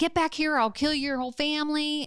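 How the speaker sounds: all-out, high-pitched screaming outburst. Retelling a threat shouted while holding a baby: imitating someone screaming. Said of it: "she was screaming".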